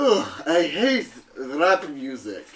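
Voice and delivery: slow, drawn-out coffin-dweller character voice. Voicing a man woken from his coffin by loud music: man woken in his coffin.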